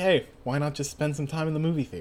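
normal talking voice

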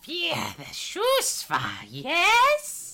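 very high, very drawn-out, hyena-like beast voice. A narrator voices a creature speaking directly to a player's character: voicing the creature. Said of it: "and it says".

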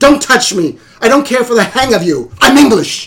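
mock indignant, neurotic outburst, high and loud. Describing a film, acting out a woman rebuffing an elderly italian woman, imitating a neurotic outburst. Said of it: "she's so neurotic".

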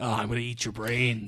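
dark, brooding voice. Describing Venom as all dark and brooding: dark brooding Venom voice. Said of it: "he's all dark and brooding".

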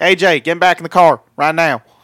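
put-on loud, high-pitched Georgia accent. Podcast hosts joking about a wrestler as a dad, AJ Styles impression, Georgia accent. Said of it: "any excuse for us to do an AJ Styles impersonation".

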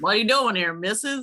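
put-on cowboy voice. Mimicking how he speaks to her, imitating a cowboy voice. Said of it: "he talks to her like he's a cowboy".

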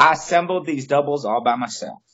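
slight, gentle put-on Southern accent, very high. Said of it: "I put that Southern accent on".

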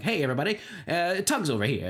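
put-on old Transatlantic accent, like 1940s television. Imitating the way they say it, in an old Transatlantic TV accent. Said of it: "It's like Atlantic TV accent".

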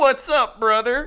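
playful, high, jokey tone. Retelling the loudmouth fan's greeting to a ballplayer: imitating a playful "brother". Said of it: "it was almost playful".

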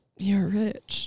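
mock-sad defeated tone. Retelling a film scene where a defeated man looks around, imitating a sad remark. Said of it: "He just looks around just".

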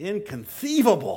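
high, heavy lisp on the s sounds of inconceivable. Imitating a movie character's famous line with a notable lisp. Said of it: "with his very notable lisp saying".

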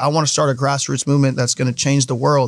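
ordinary delivery

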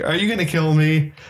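anxious, nervous, uneasy voice. Retelling a film scene where a character asks a question: imitating a nervous question. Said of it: "Cindy is asking nervously".

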